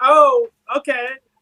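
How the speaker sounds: mock awkward, flustered, very high. Retelling a cartoon scene, acting out Aang's reply: imitating Aang sounding awkward. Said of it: "he's very, like, kind of, like, awkward about it".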